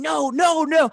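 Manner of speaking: loud, high-pitched screaming. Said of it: "he's screaming".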